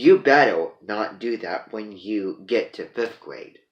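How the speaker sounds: very loud, menacing, mean, talking-down scolding tone. Retelling how a teacher stopped a boy running down the hall, imitating a mean scolding. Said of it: "talked meanly down to his face".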